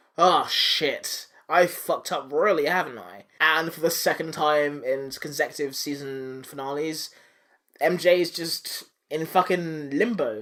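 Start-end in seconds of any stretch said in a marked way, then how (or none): 0.2-3.3 slow, rueful, woeful lamenting. Recapping a season finale, voicing the unmasked hero on a rooftop, mock lamenting.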